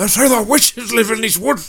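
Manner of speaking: high and loud, belted out. Quoting a favorite movie line to another speaker: Gimli voice. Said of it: "I'm going to assume that that's Gimli".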